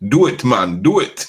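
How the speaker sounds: put-on, most Jamaican-sounding accent possible. Asking someone to pass a message on to him, the speaker uses a put-on Jamaican accent. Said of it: "in my most Jamaican of voices".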